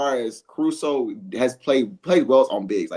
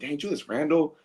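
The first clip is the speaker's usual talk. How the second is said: put-on upset, heated tone, higher and quieter; 3 semitones higher, 5 dB quieter than usual. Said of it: "I was heated".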